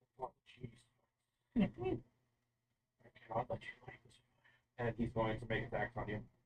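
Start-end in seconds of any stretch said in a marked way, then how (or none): 0.2-4.1 huge, looming giant dragon voice. Voicing a giant dragon landing and looking down at the players: giant dragon voice. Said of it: "the giant albino red dragon suddenly fly over and land over the forge. And looking down at you, suddenly says".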